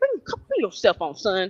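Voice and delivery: authoritative fatherly voice with swooping pitch. Retelling how guards moved a man along: imitating a father's authority. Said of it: "like how a daddy handles this".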